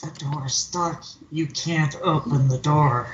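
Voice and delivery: hushed whisper. Speaker, mid-story, tells another person something in secret, whispering. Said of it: "I'll whisper to Quinn like".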